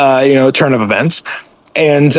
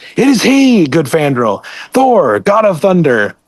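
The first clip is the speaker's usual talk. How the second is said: loud herald-like announcing call; 3 semitones higher than usual. Retelling a comic scene where Volstagg shouts: imitating Volstagg shouting. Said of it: "Volstagg just shouts".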